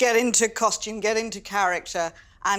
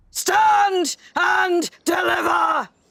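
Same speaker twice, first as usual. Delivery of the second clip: play-acted, very high, shrill shouting cry; 9 semitones higher, 4 dB louder than usual. Listener repeats a line from the story being told, shouting. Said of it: "What she keep shouting?".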